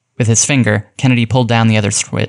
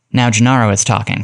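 plain

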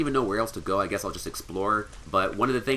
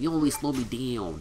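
put-on young kid voice; 3 semitones higher than usual. Playing a game and mocking a character's line: [name] as a 12-year-old. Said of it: "He sounds like a 12-year-old".

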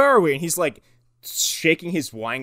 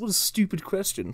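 haughty, snooty upper-class rich voice, pitched up; 6 semitones higher, 6 dB quieter than usual. Retelling a demon's lines, imitating a snooty wealthy guy. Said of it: "a snooty, wealthy guy".

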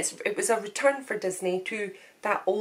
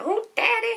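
very high-pitched put-on southern drawl; 13 semitones higher than usual. Imitating a character from Princess and the Frog: imitating a southern drawl. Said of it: "Love her in the southern drawl".

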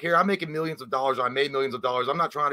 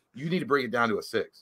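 put-on irritation, curt, with real anger showing through; 2 semitones lower, 3 dB quieter than usual. Retelling what an angry J C said to Justin: imitating someone pissed. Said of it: "But J C was pissed".

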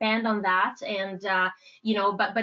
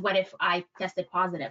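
plain

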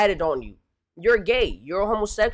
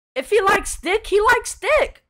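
voice cracking and breaking, higher; 11 semitones higher than usual. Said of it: "my voice is cracking".

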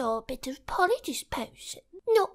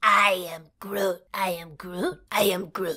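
put-on tree creature voice, lower; 10 semitones lower than usual. Doing a voice the listener praises: Groot voice. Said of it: "They're doing the Groot".

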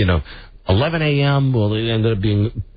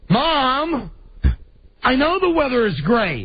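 put-on shrill, sing-song, swooping, exasperated teenage tone; 14 semitones higher than usual. A parent describes a teenage kid answering back, imitating a teenager's tone. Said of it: "anybody with a teenage kid knows this tone".

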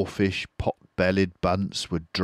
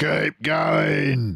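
raspy, rough, high shout, word "going" drawn out; 8 semitones higher than usual. Boggis calling to Bunce and Bean while they dig, shouting. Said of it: "the fat boggis shouted to Bunce and Bean".

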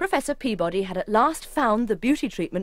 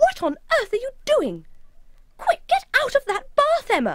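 very high, shrill, swooping alarmed shriek; 3 dB louder than usual. Narrator reads Lucy, horrified at what she sees, shrieking. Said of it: "Lucy shrieked".

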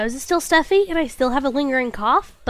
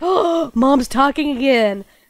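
put-on pet voice. Speaking for the pet who is being loud: voicing the pet. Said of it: "Bina's being loud. She's like".

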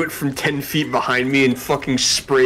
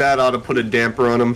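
ordinary talk

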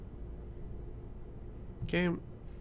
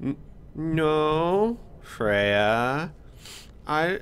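sheepish, stammering, raised voice. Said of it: "all sheepish".

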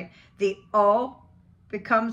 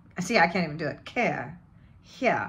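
usual speaking voice

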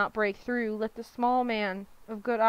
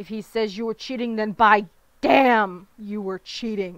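loud, snarling, roaring voice; 6 dB louder than usual. Narrator reading a lord's words to his firstborn son, roaring, snarling. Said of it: "Lord Witten snarled, ... Within roared".

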